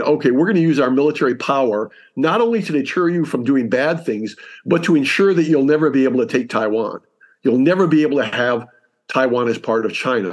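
normal talking voice

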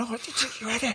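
high, soft scolding tone. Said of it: "I'm telling off my wife".

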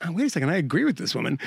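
normal talking voice

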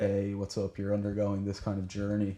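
ordinary talk

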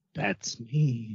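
said very quietly. Speaker repeats what another person said when introduced, very quietly. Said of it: "He said it very quietly".

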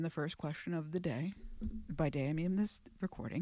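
hushed mock-serious tone.

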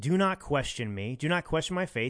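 ordinary delivery

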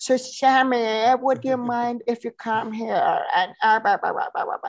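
Persian spoken with a put-on English accent. Speaker retells someone asking Sammy to come over, in English-accented Persian. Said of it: "English accented Persian".

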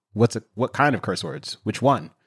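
ordinary talk, nothing marked

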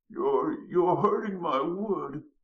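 weak faltering stammer, very high and very slow. Narrating a story, voicing Mr. Stump: feeble old stammering voice. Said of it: "stammered in a feeble old voice".

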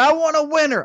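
very high, loud, acted-out shouting yell. Retelling a tied soccer game in stoppage time: imitating own loud yell. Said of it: "I yelled that really loud".

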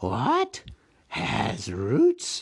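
hissing, creepy creature voice. Narrator reading the riddle scene, Gollum begins asking: Gollum's hiss. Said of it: "So Gollum hissed".

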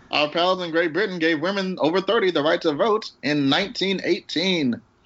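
put-on high-pitched old-time announcer voice. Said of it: "my old time announcer voice".

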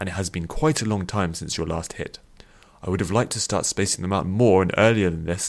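ordinary delivery

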